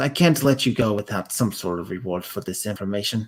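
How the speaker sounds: hushed, low stage half-whisper. Narrator voicing a woman speaking back through the door: half-whispering. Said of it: "she whispers back into it and goes".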